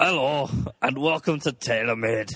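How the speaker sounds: put-on Scottish accent. Asked to do it in their Scottish, opening the show in a Scottish accent. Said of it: "Do it in your Scottish".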